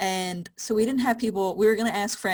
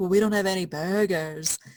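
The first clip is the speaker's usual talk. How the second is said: shoddy, bad, put-on British accent. Retelling a scene from a zombie movie, in a bad british accent. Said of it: "my shitty British accent".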